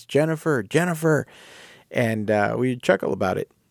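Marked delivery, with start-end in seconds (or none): 0.1-1.3 put-on old man's yelling voice, much higher. Retelling a voice heard every other week, imitating an old man yelling. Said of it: "in an old man's voice".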